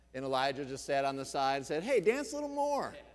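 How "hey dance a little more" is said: high-pitched, sarcastic tone. Retelling how a man by the side taunted dancing prophets, retelling a sarcastic taunt. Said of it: "He was all sarcastic with them".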